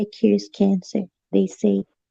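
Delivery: soft, hushed half-whisper. Retelling what a taxi driver said: imitating a half-whisper. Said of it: "he whispered".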